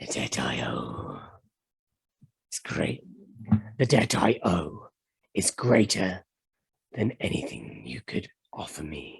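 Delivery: deep, very low dragon voice. Voicing a dragon that refuses a spell's bargain: voicing a dragon. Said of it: "it just says".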